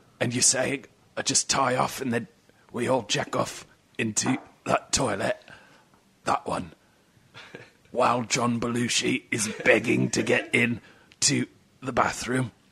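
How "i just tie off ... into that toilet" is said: put-on Cockney movie-star voice, quieter. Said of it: "That's my impression of, uh, Michael Caine".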